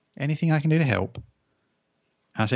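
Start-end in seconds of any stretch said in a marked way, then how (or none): 0.2-1.2 little voice. Retelling being offered help while overloaded making breakfast, in a little voice. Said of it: "I hear a little voice".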